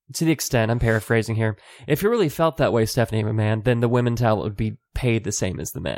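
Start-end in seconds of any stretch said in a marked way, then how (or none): none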